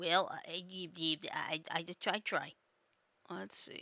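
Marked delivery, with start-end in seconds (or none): 0.0-2.5 stuttering cartoon voice, lower and quieter. Answering praise for an impression, in a Porky Pig stutter. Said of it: "Not a bad impression of Porky Pig either".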